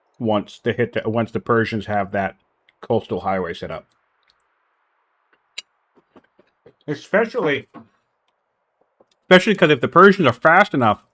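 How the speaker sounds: chewing while speaking, mouth full. Commentating on the Persians and Hittites, talking while chewing. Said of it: "I'm chewing".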